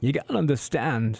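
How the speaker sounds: tentative, hesitant actor impression. Trying out an impression on air: Christopher Walken voice. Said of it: "do Christopher Walken's voice".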